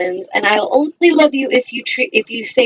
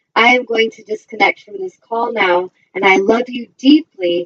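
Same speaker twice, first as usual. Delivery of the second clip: plain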